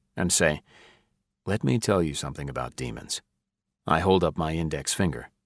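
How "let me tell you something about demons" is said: low, hushed, lowered, almost a half-whisper. Reading a scene aloud, warning someone about demons: lowered voice, almost a half-whisper. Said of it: "I lower my voice, not quite to a whisper".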